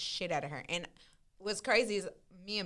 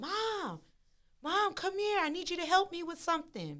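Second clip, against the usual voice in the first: very high, stretched-out calling yell, acted out; 10 semitones higher, 5 dB quieter than usual. Retelling calling to her mom through a cracked-open door, retelling her own yell. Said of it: "and I'm like yelling".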